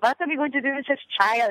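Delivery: mock German-Austrian accent. Explaining wanting to be an actress, quoting her immigrant parents, imitating parents' german accent. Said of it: "They talked like this with a German accent and an Austrian accent".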